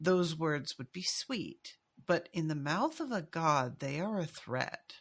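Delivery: said slowly and measured, each word weighed.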